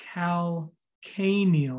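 calcaneal drawn out slowly, stress on the second A. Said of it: "Emphasis on the A, the second A".

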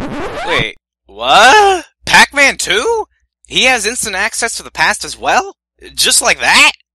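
very loud, abrupt, drawn-out sudden realization. Reacting to Pac-Man's quest, in sudden realization. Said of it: "*sudden realization*".

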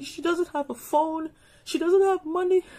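high, tearful crying while speaking. A parent recounts their daughter missing from their flight, crying. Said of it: "I'm sorry, I'm crying".

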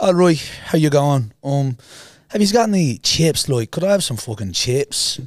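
put-on Irish accent. Retelling a teenage prank on a train: fake irish accent. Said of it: "Pretending to be Irish".

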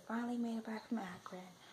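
whispered voice. Back from Akron at 11 o'clock at night, whispering. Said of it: "I'm whispering because it's like 11 o'clock at night".

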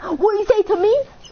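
high, loud, mock indignant delivery. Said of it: "and he was like".

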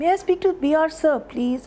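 anxious, nervous voice. The narrator asks a man to speak to br, a nervous request. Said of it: "nervously reverting to the role of secretary".

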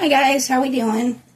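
crunchy, crackly voice, a bit high. Greeting viewers at the start: crunchy voice. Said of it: "that came out crunchy".

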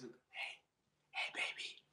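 seductive, breathy ASMR whisper, barely voiced, very quiet. Joking about ASMR videos that whisper to men: mock ASMR whisper. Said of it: "the whispering to".

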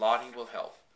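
plain reading voice

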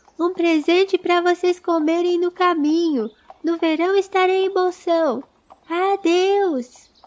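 high, glad, carefree, cheerful shout. Pippin calls from the tree to Bilbo and Frodo as they leave, cheerful shout. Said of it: "Gritou Pippin sem tristeza, feliz".

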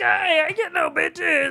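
impression in a very high, squeaky voice.

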